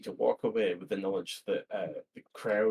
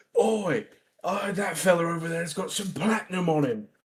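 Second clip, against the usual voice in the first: loud, pitched-up hollering in a put-on accent; 8 semitones higher, 6 dB louder than usual. A player voicing Teddy pointing a mob at a nobleman, shouting in a put-on accent. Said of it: "in a put on accent, Teddy will shout really loudly".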